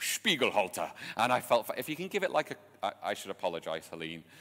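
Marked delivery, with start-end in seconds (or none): 0.0-0.9 mock German accent. Recounting a word said to cheer himself up, cod german accent. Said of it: "my cod German accent that I'm giving to this".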